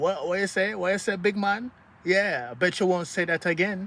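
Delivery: put-on high Toronto slang accent. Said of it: "Why are you talking like that?".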